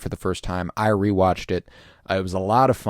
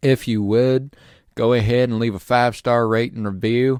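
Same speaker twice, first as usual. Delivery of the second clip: put-on Southern country accent; 3 semitones higher than usual. Asking listeners to leave a rate and review: Southern country accent. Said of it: "Southern country accent".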